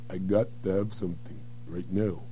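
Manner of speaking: very slow, every word stretched and unhurried. Demonstrating an urgent line said really slowly: very slow delivery. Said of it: "but you said it really slowly?".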